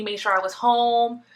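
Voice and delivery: ordinary talk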